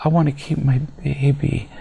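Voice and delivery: sweet, syrupy, emotional little voice. Criticizing teen mothers, mimicking a fifteen-year-old girl in a mock syrupy emotional tone. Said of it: "with this emotional little syrupy tone in her voice".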